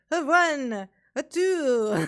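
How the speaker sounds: very slow, high vampire voice, "two" stretched. Trying to recall how a character used to talk: the Count voice. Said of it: "I don't even know how he used to talk".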